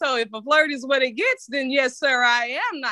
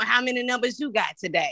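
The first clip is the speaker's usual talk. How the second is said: ordinary talk, nothing marked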